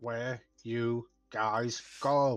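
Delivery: deliberately slow. Repeating a question to the group a second time, said more slowly. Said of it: "I say it again more slow".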